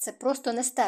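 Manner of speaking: ordinary delivery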